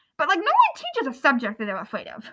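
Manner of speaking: ordinary talk, nothing marked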